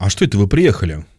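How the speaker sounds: mock wary, doubting, suspicious, probing tone. Retelling a TV scene where a mother greets her two sons, acting out suspicion. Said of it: "А она такая подозрительно".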